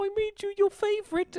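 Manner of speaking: light put-on Cockney accent, very high pitch. Retelling what he says while setting down a plate of food, in a Cockney accent. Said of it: "talking with a little like Cockney accent".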